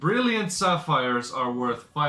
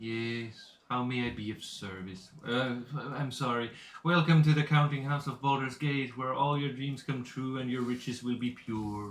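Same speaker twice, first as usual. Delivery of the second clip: put-on bored middle-aged character voice; 6 dB quieter than usual. Voicing a bank clerk greeting the players at the booth: bored middle-aged bank clerk voice. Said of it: "a very bored, middle-aged lady just looks at you".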